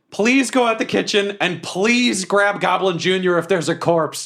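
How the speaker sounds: yelling. Playing a character in a game scene, calling out to Quinny, yelling to Quinny. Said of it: "And I yell to Quinny".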